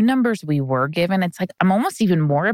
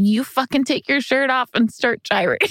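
acted, high-pitched, screamed, demanding yell; 6 semitones higher than usual. Recalling screaming at an elderly butler, retelling a scream. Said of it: "i'm screaming at the elderly butler like".

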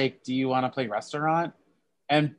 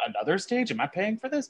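rushed, fast mutter under the breath, half to himself; 6 semitones higher, 6 dB quieter than usual. Describing a moment that made them die laughing, retelling muttering under breath. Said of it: "when he's under his breath saying like".

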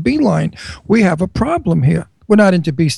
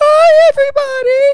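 very high, girly, put-on feminine voice; 4 dB louder than usual. Teasing another speaker about their voice, imitating a put-on female voice. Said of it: "eventually your female voice will come through and we're gonna hear this".

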